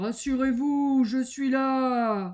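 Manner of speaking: very loud, big booming voice, "là" drawn out. Narrator reading a fable; someone answers the call to help the trapped bear: big voice. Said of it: "dit une grosse voix".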